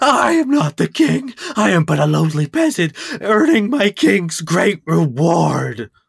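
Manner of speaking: furious, enraged, high-pitched ranting outburst. Voicing a character who is called king by a player: furious character. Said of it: "He goes into a fury when you call him king".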